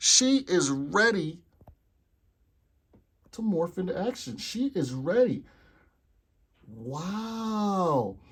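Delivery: slow, shocked, astonished amazement, drawn-out wow. Reacting to how well a figure's hair sits: shocked and amazed. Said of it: "You guys hear it in my voice because I am equally as shocked".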